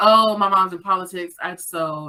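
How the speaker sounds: ordinary talk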